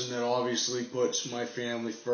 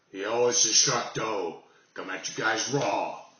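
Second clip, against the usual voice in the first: raspy hoarse voice. Greeting viewers while under the weather: hoarse voice. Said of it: "my unusually hoarse voice".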